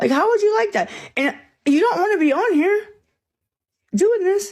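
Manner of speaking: very high-pitched voice, pitched way up. Talking back while on the show, high-pitched voice. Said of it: "High-pitched voice".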